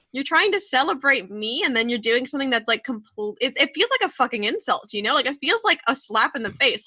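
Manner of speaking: ordinary talk, nothing marked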